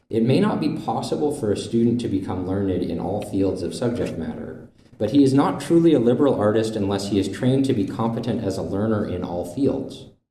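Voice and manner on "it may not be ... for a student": plain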